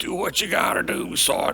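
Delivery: slow, rough, gravelly, very high-pitched voice. Retelling his dad's reply in his room before the bar; imitating dad's gravelly voice. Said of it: "the gravelly voice".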